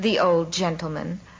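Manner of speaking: usual speaking voice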